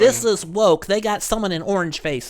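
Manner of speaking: high, outraged tone. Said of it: "That's what you sound like".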